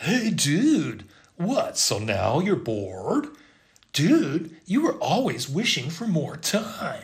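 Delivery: loud, swooping, easygoing California surfer-dude voice. At the temple at sunrise, voicing the reply in a california surfer voice. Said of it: "speaks to me in the voice of a California surfer".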